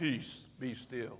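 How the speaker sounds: deep, breathy, half-whispered low voice. Imagining Jesus speaking to a storm in your life, deep Jesus voice. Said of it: "he would say it with a deep voice like that".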